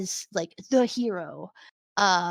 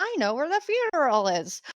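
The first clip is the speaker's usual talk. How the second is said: cunning villain voice, pitched higher; 5 semitones higher than usual. Retelling a scene from a show, doing a Zemo impression. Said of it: "That's my Zemo impression".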